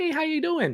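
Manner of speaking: very high, bright, happy, projected voice. Demonstrating how their voice changes when projecting, in a higher, happier projected voice. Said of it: "So it goes a little bit higher".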